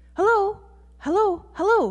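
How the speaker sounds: jittery, nervous, very high and very loud. A character greets someone new for the first time; nervous. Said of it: "Jitterbug said nervously".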